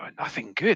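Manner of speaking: in-character whispering. Voicing a character's reply about bad news in a whisper. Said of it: "sort of whisper".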